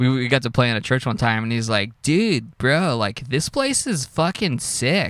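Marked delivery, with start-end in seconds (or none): 2.0-5.1 very slow, spaced-out, high-pitched stoner drawl. Retelling the drummer friend at a church gig: imitating a stoner voice. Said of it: "talk like stoners".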